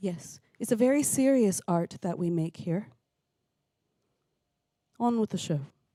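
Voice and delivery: mock deadpan, fake straight-faced delivery. Jokingly calling a vocal banjo imitation serious art: mock deadpan. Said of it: "That's the most deadpan I've ever been".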